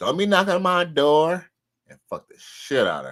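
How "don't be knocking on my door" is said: put-on Dominican-accented woman's voice. Imitating a woman talking at her door: Dominican accent. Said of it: "with that Dominican accent".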